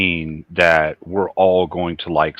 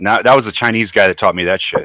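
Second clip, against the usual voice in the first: ordinary delivery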